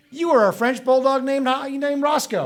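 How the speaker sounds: high, loud cooing voice.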